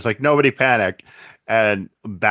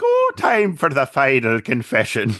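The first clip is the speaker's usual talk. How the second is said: put-on sing-song, swooping Irish accent; 3 semitones higher than usual. Retelling a scene from a story, doing the Joker's Irish accent. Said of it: "he's even got like the Irish accent".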